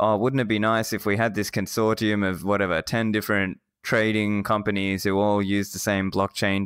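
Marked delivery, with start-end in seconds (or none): none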